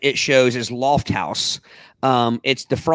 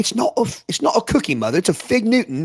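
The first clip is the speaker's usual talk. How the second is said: put-on British-ish accent, pitched up; 8 semitones higher than usual. Retelling a line from a cookie commercial: imitating a commercial kid's British-sounding accent. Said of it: "that accent I gave was".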